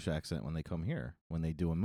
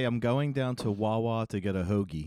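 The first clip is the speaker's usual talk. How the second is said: plain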